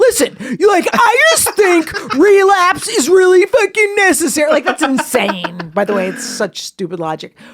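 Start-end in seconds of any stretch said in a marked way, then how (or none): 0.0-4.5 play-acted very high, loud, forthright, super defensive, angry. Imitating another speaker from a past segment: imitating someone angry and defensive. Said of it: "Bo sounds really forthright and angry the entire time, super defensive".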